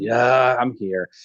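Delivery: put-on weary, tired sighing voice. Retelling an officer's reply to a shouting general: imitating a sighing reply. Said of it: "He must have sighed and said".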